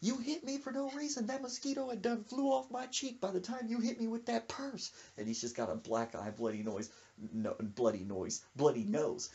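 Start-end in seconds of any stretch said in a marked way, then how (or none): 0.0-4.9 put-on very high, furious, ranting angry yell. Retelling how a man yelled at a woman, retelling an angry yell. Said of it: "He was mad, just yelling at her".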